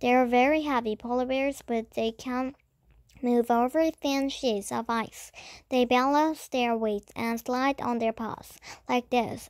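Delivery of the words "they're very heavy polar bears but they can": ordinary delivery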